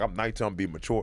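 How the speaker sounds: normal talking voice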